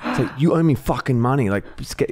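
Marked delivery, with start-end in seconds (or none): 0.4-1.5 mock scary, intimidating, menacing and threatening. Retelling the fan repeating his demand for money: imitating a scarier threatening fan. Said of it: "kept getting scarier and scarier".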